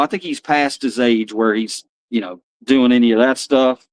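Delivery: ordinary delivery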